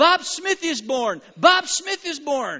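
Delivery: very loud, high, drawn-out, full-lung screaming. Acting out someone pounding on a door at night: screaming at the top of their lungs. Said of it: "screaming at the top of their lungs".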